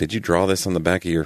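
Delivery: ordinary delivery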